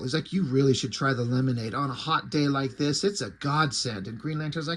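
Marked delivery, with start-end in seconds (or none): 0.3-4.1 needling, passive-aggressive, pushy insistence. Retelling a comic scene where Batman pushes lemonade: imitating passive-aggressive Batman. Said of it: "like he's being a passive-aggressive asshole".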